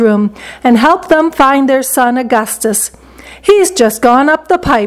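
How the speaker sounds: ordinary delivery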